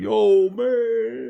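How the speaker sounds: very high, rough, stretched-out man's drawl. Imagining Rocky's reaction when an opponent bites his ear: imitating Rocky Balboa. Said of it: "Rocky might be like".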